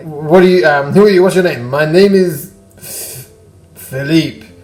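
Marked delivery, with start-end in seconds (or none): 1.7-4.3 put-on slow, thick, heavily laid-on Russian accent. Asked his name, a character answers as Philippe with Russian accent. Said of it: "You have a very Russian accent".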